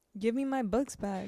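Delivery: ordinary delivery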